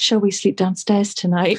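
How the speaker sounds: tiny, meek, small, timid little voice. Retelling a silent night after seeing a shadow, imitating Ben's little voice. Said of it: "Ben's little voice just goes".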